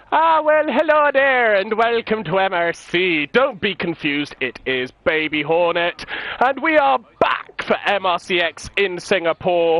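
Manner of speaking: put-on Irish accent. Host welcoming viewers back to the show, in an irish accent. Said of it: "Why did I introduce in an Irish accent".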